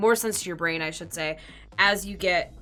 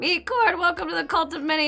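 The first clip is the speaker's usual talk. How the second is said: voice cracking, breaking way up into a squeak; 11 semitones higher, 4 dB louder than usual. Welcoming a new follower by name, voice cracking. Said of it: "that was a voice crack and a half".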